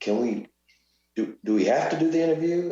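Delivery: acted whispering. Retelling how a boxing champ asked about the interview: imitating someone whispering. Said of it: "he's whispering in my ear".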